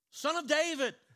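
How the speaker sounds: very high, loud yell. Speaker retells the blind beggar calling to Jesus of Nazareth, retelling a yell. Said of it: "He starts yelling out".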